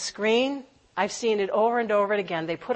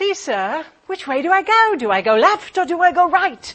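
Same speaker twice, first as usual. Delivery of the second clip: really bad, clumsy put-on British accent, high and raised; 7 semitones higher, 7 dB louder than usual. Retelling Alice asking the Cheshire Cat which way to go, bad British accent as Alice. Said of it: "I do a really bad British accent".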